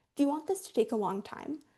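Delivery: calm, even, unruffled, neutral tone. Explaining a tactic, the speaker demonstrates asking someone a question: calm and neutral. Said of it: "say really calmly and neutrally".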